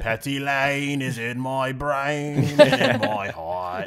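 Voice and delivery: put-on British accent. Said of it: "is that your British accent?".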